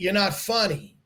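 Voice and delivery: ordinary talk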